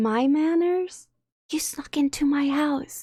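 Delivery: hushed whisper. Answering an intruder who has snuck into the house: whispering back. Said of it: "I don't know why I'm whispering back".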